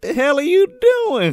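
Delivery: high, loud, startled, indignant maid voice.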